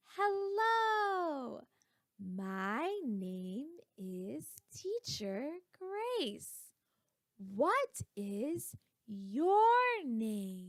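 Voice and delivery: very slow, deliberate, word-by-word teacher-like talk. Teacher demonstrating a greeting from a lesson for students, talking really slow. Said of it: "But talking really slow".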